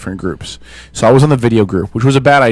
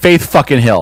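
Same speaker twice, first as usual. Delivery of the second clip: ordinary talk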